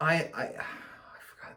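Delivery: soft, quiet whispered aside.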